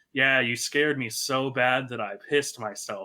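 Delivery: normal talking voice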